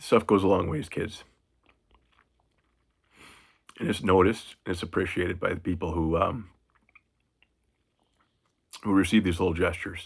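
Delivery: getting emotional, choked up, near tears. A paratrooper dad speaking to his kids, getting emotional. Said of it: "sorry to get emotional about this".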